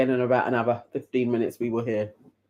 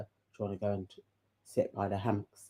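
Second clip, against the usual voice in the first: put-on seductive, sultry voice, deep, film-siren style; 3 semitones lower, 12 dB quieter than usual. Mimicking how Helena asks to sit by the hammocks: imitating Helena's deep seductive voice. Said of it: "Helena does this like a deep kind of".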